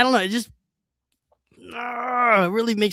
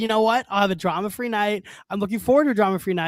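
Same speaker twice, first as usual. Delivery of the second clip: ordinary delivery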